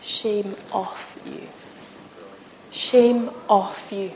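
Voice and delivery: very quiet, slow, barely audible whisper. Acting out Jesus speaking to us: Jesus whispering. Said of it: "Jesus comes and he whispers".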